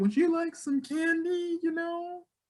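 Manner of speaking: very high, eerie, weird, ominous creepy voice. Retelling a creepy lady offering a kid candy: imitating an ominous, weird voice. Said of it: "saying it in such a very ominous, weird way".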